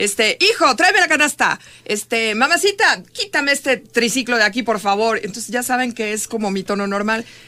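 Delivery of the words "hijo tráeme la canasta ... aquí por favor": loud, everyday, yelled shouting. Retelling how she calls her kids: imitating own yelling. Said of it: "todo el tiempo estoy gritando".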